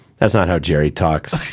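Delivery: ordinary delivery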